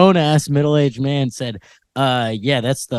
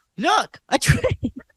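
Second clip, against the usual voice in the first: put-on toddler yell, much higher and slower; 5 dB quieter than usual. Reading about a train-obsessed three-year-old, imitating the toddler yelling. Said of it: "the three-year-old who's obsessed with trains yelled".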